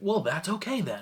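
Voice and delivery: put-on American accent. Retelling a Doctor Who scene: imitating the Toy Maker's American accent. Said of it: "the toy maker just goes to an American accent".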